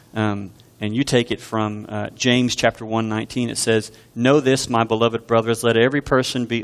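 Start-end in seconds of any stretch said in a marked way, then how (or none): none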